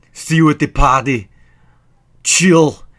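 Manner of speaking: very loud, high-pitched, punchy one-liner blasted out. Quoting terrible movie lines: Arnold Schwarzenegger impression. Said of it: "he delivered all these terrible lines".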